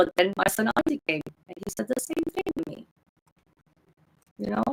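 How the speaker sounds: voice breaking with tears. Telling an emotional story about a son, voice cracking from tears. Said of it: "my voice getting crackly. From the, from the, the tears".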